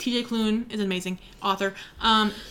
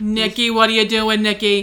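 put-on New York accent; 7 dB louder than usual. Imitating a loving father calling his son, New York accent. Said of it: "in his like New York accent".

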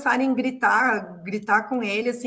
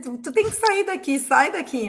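put-on security guard voice, yelling; 3 semitones higher than usual. Translating what a security guard said: imitating a guard yelling. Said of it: "começou a gritar com ele".

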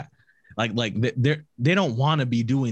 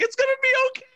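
mock tearful girlish voice, higher. Retelling how the crying girls comforted each other: imitating crying girls.

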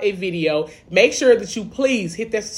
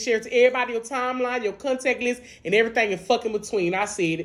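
ordinary talk

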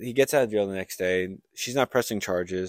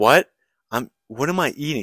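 put-on panicked freak-out, louder; 4 semitones higher, 8 dB louder than usual. Retelling how a man in a restaurant reacted, imitating someone freaking out. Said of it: "And he starts freaking out".

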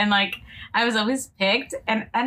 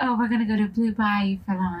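fake bougie-sounding voice. Chatting with a friend and showing off the bougie voice. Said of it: "it's your bougie voice?".

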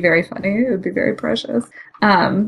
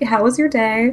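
plain

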